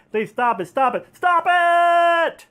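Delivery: very high, rising, frantic, pleading, desperate scream. Retelling a story's ending, acting out a frantic character: retelling a desperate scream. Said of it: "And he's like screaming".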